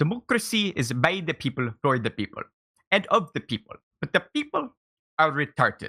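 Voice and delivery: put-on Indian-style accent. Told to do his best Osho voice, the speaker performs an Osho impression, Indian-style accent. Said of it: "you got to give yourself the Indian style accent".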